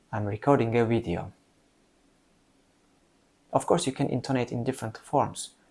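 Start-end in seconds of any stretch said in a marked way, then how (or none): 0.1-1.3 certain, confident, falling statement intonation. Demonstrating intonation, the speaker repeats an example sentence with sure, falling statement intonation. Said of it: "Let me repeat".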